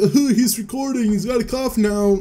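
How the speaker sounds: cringy, high-pitched, try-hard, wannabe-funny comic voice. Speaker voices his body noticing he is recording: wannabe-funny voice. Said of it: "I don't know why I'm doing that voice".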